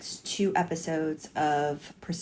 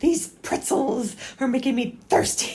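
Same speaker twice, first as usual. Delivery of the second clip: very high-pitched, loud, sitcom-style delivery; 9 semitones higher, 6 dB louder than usual. Recalling a Seinfeld episode: George Costanza impression.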